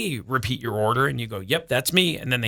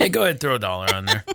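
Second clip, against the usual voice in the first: play-acted laid-back, cool, nonchalant, casual offhand tone; 3 semitones lower than usual. Act out what she said, hand motion and all, imitating her cool, casual delivery. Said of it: "You have to say it like that".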